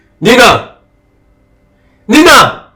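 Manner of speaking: calling out loudly. Calling for someone after hearing of a slap: shouting a name. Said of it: "Why are you shouting my name?".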